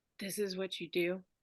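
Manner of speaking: very quiet, hushed half-whisper. Reading her line while crouching behind a trash can, half-whispering. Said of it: "She whispers".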